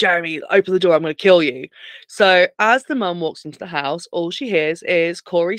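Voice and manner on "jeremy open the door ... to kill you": mock screaming voice. Retelling a film scene, a character threatening through a door: retelling a screamed threat.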